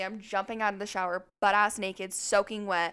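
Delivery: normal talking voice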